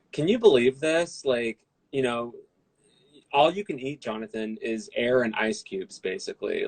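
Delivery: ordinary talk, nothing marked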